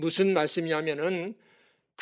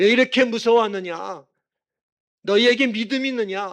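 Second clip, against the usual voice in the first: loud, stern, reproachful tone. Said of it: "꾸짖으셨습니다".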